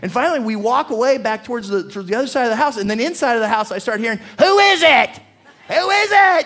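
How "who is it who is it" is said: shrill, very high, slow, drawn-out yell. Retelling hearing someone yell from inside a house, imitating a woman yelling. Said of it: "she's yelling for you".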